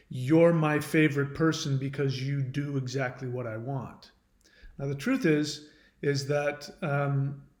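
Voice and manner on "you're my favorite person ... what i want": normal talking voice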